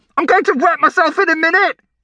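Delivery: shrill shout, yelled out, pitched very high. Narrator reads Brian waiting for the bathroom, shouting. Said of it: "shouted Brian".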